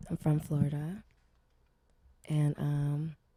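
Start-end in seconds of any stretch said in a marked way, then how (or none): 0.1-1.0 sultry, sensual voice, lower. Introducing herself to the group: sensual voice. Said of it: "your voice got sensual as hell".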